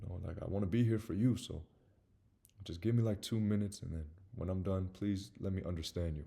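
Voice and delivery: soft, gentle voice. Showing how to approach an upset partner: gently. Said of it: "I would just approach very gently, like this".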